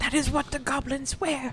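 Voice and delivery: put-on whisper. Retelling a scene, the speaker voices the mother answering her child, whispering. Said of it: "she whispers to you".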